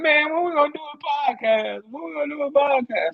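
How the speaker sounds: crying, high-pitched, whiny pleading voice. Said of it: "got in the group the other day crying".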